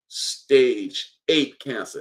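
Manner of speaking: very slow, drawn-out delivery, each word laid out. Addressing listeners about the leader they chose, saying it very slowly. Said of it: "I'm gonna say it real slow".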